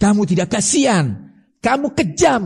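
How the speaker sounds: scolding, rebuking tone.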